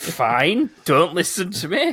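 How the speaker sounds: loud, drawn-out, swooping sarcastic sing-song. Acting out a character's reply after being shot at, mock-sarcastic. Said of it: "Just sarcastic, like".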